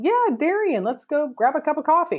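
mock nonchalant, casual voice. Retelling a sponsor's reply about human trafficking, imitating someone super nonchalant. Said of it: "just super nonchalant about it".

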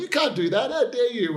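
mock, very high-pitched yell. Gamer recalls reacting to a plot twist, retelling yelling at the TV. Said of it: "yelling at the TV going".

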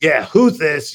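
really ugly, loud voice. Retelling answering a call from an unknown number, using the really ugly voice. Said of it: "I had the really ugly voice on".

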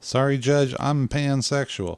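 sudden mock Southern accent. Imagining an excuse to get out of jury duty, telling the judge, in a southern accent. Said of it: "I gave you the Southern accent all of a sudden".

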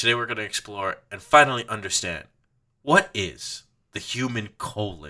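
put-on, grand, dramatic showman announcer voice. Retelling a film scene's show opening: imitating a really dramatic announcement. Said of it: "he has that really dramatic".

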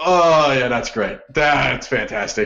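low, awed moan. Retelling own reaction to a beautiful goal: imitating own awed moaning. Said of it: "It's just literally moaning".

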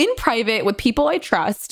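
ordinary delivery

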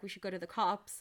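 ordinary delivery

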